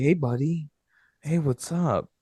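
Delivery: forced, buddy-buddy, trying-to-be-friendly voice. Retelling a movie scene where a friend talks like a stepdad: imitating a stepdad tone. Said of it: "he tries to talk to him like a stepdad".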